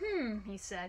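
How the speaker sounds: ordinary delivery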